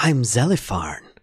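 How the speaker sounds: creature voice, playful. Narrator voicing a creature that grabbed the ship, playful Zelifarn voice. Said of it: "It seems almost playful in its response".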